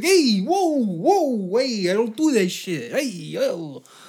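put-on Italian-American accent, "yo" drawn out. Imagining how a well-known mobster character would sound dubbed over another group, doing the voice. Put-on Italian-American accent. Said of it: "an Italian voice coming out".

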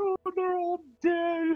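loud uncontrollable sobbing. Narrator voicing a character who finds his friends all dead, sobbing loudly. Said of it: "he starts sobbing uncontrollably, very loudly".

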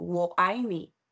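plain

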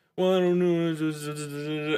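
slow, drawn-out, sing-song mumble.

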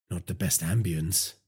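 plain reading voice

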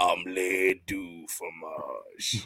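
very deep, slow, soft, drawn-out voice. Picturing the Undertaker saying Dexter's line, in Undertaker's deep voice. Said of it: "but like in his deep ass voice".

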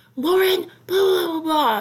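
mock angry hothead outburst, loud, high yell. Retelling how Max yelled out of nowhere after a sarcastic remark, imitating Max yelling. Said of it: "Max just yells at me".

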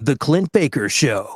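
deep announcer voice reading a title. Performing a podcast intro after being asked to do the voice: podcast intro voice. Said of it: "Do the voice".

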